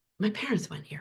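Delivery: bashful, very quiet, barely audible murmur. Retelling what a son said to a student: imitating a shy son. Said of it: "my son very shyly says".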